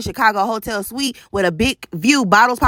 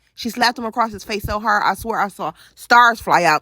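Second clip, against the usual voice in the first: normal talking voice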